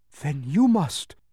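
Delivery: breathless, gasping out the words. Replying to a demon of petty tasks, gasping out the words. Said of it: "gasped Milo".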